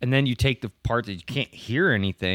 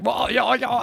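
very high-pitched put-on English accent; 12 semitones higher than usual. Imitating an actress heard talking after the show: imitating an English accent. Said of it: "you wouldn't even know she's English".

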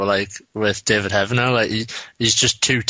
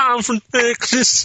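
shrill, very high-pitched shouting; 13 semitones higher than usual. Repeating an impression done for years, to someone who remembers it, shouting Nicolas Cage impression. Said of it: "your impression of Nicholas Cage for years just shouting I'm from Texas".

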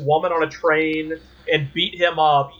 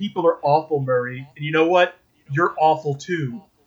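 normal talking voice

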